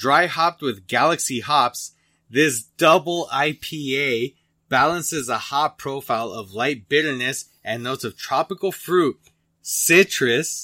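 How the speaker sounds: loud, slow reading voice. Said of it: "said that really fucking loud into the microphone".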